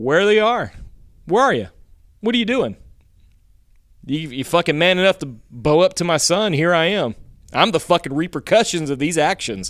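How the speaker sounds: mock riled-up rant. Retelling a father searching for a man hiding in the barn, imitating someone getting loud. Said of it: "he starts getting loud".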